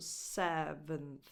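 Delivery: slow, low seventh with stress on SEV. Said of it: "the stress is on the first syllable".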